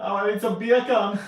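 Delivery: very high, loud, put-on laid-on Jamaican accent. Showing how "beer can" sounds in a put-on jamaican accent. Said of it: "in a Jamaican accent".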